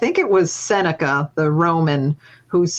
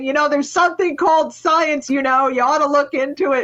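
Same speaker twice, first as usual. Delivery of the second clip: very high-pitched shouting; 10 semitones higher than usual. Retelling shouting at a creationist group at a street fair: retelling a shout. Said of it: "And I'm shouting".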